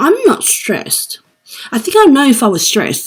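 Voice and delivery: high, swooping argumentative yell. Retelling a doctor visit, repeating what they said back to the doctor, retelling yelling and arguing. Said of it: "you're yelling and arguing with me".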